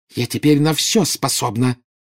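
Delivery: breathed out with hysterical notes. Narcissa, wand aimed at her sister Bella, answers her; breathed out, hysterical edge. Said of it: "выдохнула Нарцисса с истерическими нотками в голосе".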